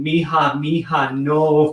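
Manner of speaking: imitated yelling, called out in a worried tone. Retelling a story of a child falling down an escalator: imitating a mother yelling. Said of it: "I hear this voice from the top floor yelling".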